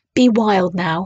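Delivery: whispering. Sitting with his arm round a lion's neck, he speaks, whispering. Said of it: "he whispered".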